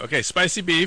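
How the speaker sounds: mock order-taker voice.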